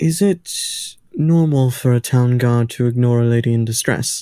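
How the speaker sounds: slow, careful, deliberate, confiding delivery. Leaning in to a character and asking a question: quiet in-character question. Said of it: "I just say this quietly".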